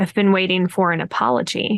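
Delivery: whispering. Voicing a character with shark eyes who speaks into an ear: whisper. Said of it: "whispers it in your ear".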